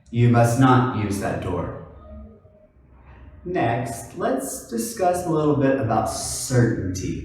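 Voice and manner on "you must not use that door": strong stress on "not". Explaining where emphasis goes with must, stress on not. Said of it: "where do I put the emphasis? It'll be on not".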